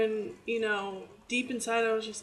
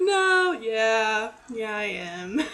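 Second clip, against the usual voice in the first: very slow, loud, acted-out laughing; 5 dB louder than usual. Retelling answering a mother's question while laughing: imitating own laughing answer. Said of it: "I just started laughing".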